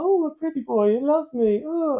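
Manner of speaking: very high, teasing, mocking pretty-boy caricature voice. Mocking how an actor prances around in a pirate film: mocking Orlando Bloom's prancing. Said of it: "he's just prancing around, going".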